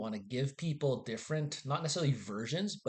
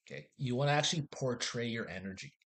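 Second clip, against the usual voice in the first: ordinary talk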